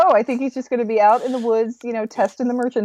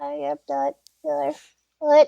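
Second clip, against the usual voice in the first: put-on little kid voice, higher pitched; 4 semitones higher than usual. Quoting a talking foot from a show: imitating a little kid voice. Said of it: "it sounds like little kid voice".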